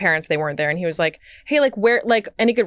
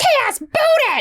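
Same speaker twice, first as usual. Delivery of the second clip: put-on accent from Watertown; 4 dB louder than usual. Recalling the moms on the soccer field growing up: Watertown accent. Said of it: "That was the Watertown accent".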